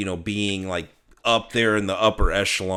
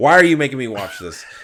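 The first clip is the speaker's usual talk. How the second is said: mimicked frightened, upset complaining tone, higher and louder; 5 semitones higher, 8 dB louder than usual. Imagining his wife being shown a scary movie: imitating his scared, upset wife. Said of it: "I can just hear her now already saying that".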